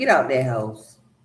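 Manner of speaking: mock jeering tone spoken through laughter. Voicing a man in a picture who laughs at people: imitating a man laughing at them. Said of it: "look at this man laughing at them like".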